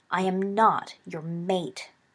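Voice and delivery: very slow, drawn-out, hissed delivery. Snape answers Remus's conciliatory apology, hissed. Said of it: "hissed Snape".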